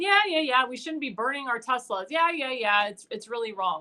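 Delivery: plain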